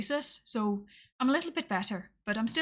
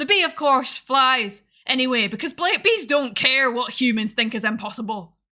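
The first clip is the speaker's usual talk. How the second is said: loud accent drifting into Irish; 6 dB louder than usual. Reading a script aloud, accent drifting into irish. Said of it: "It's it's going Irish".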